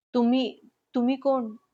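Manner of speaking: quavering, trembling, shaken voice. A narrator reads one character questioning another in a trembling voice. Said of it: "थरथरत्या आवाजात".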